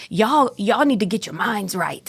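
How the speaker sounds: put-on Korean accent. Retelling what a professor told the class: imitating a professor's accent. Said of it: "And he had this accent".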